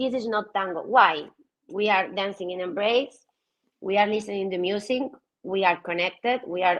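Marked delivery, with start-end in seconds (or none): none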